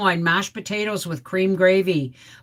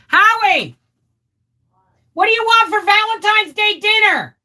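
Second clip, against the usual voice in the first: very high-pitched, loud, calling-out yell; 13 semitones higher, 7 dB louder than usual. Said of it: "sorry for yelling".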